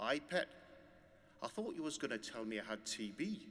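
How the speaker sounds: put-on Geordie accent laid on thick. Retelling John's reply after being told he had cancer, John's thick Geordie accent. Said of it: "He said in his beautiful, thick, Geordie accent".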